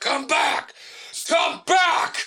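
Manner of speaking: very high call stretched out as if far away. Retelling a customer on a balcony calling out: imitating someone yelling. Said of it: "He starts yelling".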